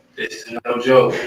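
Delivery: ordinary delivery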